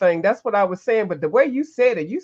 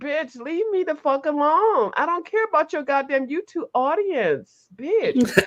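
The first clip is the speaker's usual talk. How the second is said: put-on grumpy, angry dog voice, pitched up; 5 semitones higher, 4 dB quieter than usual. Voicing the dog woken at five in the morning: voicing the pissed-off dog. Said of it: "The dog is like".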